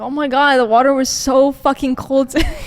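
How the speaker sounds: put-on complaining tone. Acting out own past words about cold shower water: acting out a complaining tone. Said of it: "That's how you say it".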